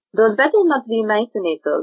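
bad put-on French accent sliding into Eastern European. Asked to do a French accent, the speaker tries one; French accent drifting Eastern European. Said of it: "it's still kind of like Eastern European".

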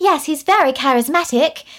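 worst-ever mock bad British accent. Quoting an actress's line in a movie, in the worst british accent ever. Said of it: "in the worst British accent in the whole entire world".

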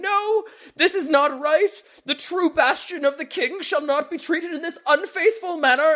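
shrill, very high shrieking scream. A character dragged kicking off the stage objects to his treatment: screaming protest. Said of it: "dragged kicking and screaming off the stage going".

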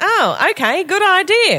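very high, loud, slow and swooping drawl. Retelling Mel Brooks agreeing to turn his movie into a musical: Mel Brooks impression. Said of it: "That's exactly how he sounds".

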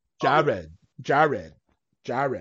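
put-on Philly accent. Retelling how a kid always said a name, imitating Lance Yiannou's Philly accent. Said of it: "he had that Philly accent".

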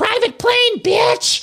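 over-animated, very high, overdone exclaiming tone. Recalling a flashback from this season, the speaker does an over-animated Lisa Rinna impression. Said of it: "Lisa Rinna's voice being like".

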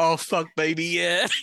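imitated, fake American accent. Retelling what someone overheard when the track ended, in a put-on american accent. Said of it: "he just heard in an American accent".

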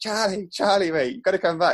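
high-pitched, loud screaming voice. Recounting running after someone who had headphones in, retelling a scream. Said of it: "screaming like".

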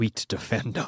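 muttered under breath. Speaking in character while looking at a scarecrow tied to a tree: muttered under breath. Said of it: "Under my breath, I mutter".

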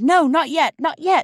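piercing, drawn-out, very high, loud outcry. A girl waving flags on the railway line as an engine approaches, crying out. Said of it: "But Bobby cried".

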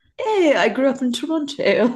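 put-on high, laughing, mocking voice.

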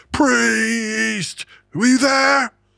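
put-on very high, very slow, rough drawn-out screech. Retelling a drunk metalhead on a train getting in his face: imitating someone screaming.

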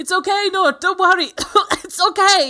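shrill, very loud, high-pitched shouting. Recapping a scene where a man tries to reason with a woman: retelling his shout. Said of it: "you can hear him shout".

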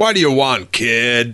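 put-on big-screen, Hollywood-style American accent. Retelling what an actor playing Han said: American movie accent. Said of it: "American movie accent".

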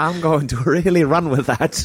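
put-on very high, botched Irish accent drifting American. Quoting an Irish woman from the story: Irish accent slipping into American. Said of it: "she was Irish, and I kind of went American".

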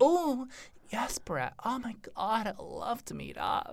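put-on hushed, whispery, breathy, slow little girl voice. Retelling answering a man's phone ad: imitating a little girl voice. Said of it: "put our little girl voice".

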